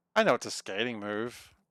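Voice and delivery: ordinary talk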